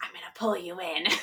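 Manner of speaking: soft, hushed half-whisper under the breath. Retelling what they half-whispered to a little girl who wouldn't cry, half-whispered. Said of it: "So I whispered".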